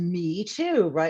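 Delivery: adorable, put-on British accent. Retelling what the editor replied at a Worldcon: David Thomas Moore's British accent. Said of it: "he said that in a really adorable British accent".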